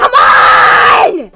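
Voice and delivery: frustrated anger. Stuck on a stupidly hard game, getting mad. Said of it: "Sorry if I'm getting mad".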